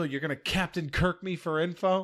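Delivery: high, angry, indignant, mad tone. Retelling a character's line to another character: imitating someone mad. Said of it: "She's so mad. She goes".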